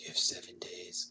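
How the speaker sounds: put-on eerie horror-style haunted little girl voice. Mocking a strange message by quoting the girl from The Ring. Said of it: "talking like the girl from The Ring".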